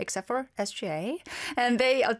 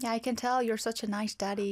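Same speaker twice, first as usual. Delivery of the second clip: normal talking voice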